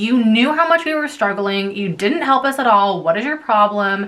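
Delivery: ordinary delivery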